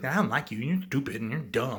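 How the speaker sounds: usual speaking voice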